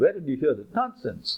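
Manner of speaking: usual speaking voice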